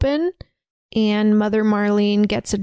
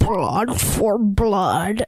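deep, hollow, echoing creature voice. Telling a story, the speaker quotes a leader who just drank blood, deep echoey voice. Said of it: "kind of an echoey, deep voice".

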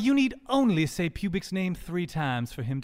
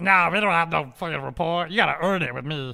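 goblin voice with broken English. Voicing a goblin who refuses a rapport with the party: goblin character voice. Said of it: "you can hear it".

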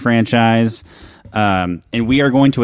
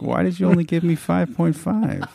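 pouty, soft, high, creaky voice; 6 semitones higher, 6 dB quieter than usual. Imitating an actor asking why the tree got five point five: imitating Mark Ruffalo, pouty. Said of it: "With his little pouty face".

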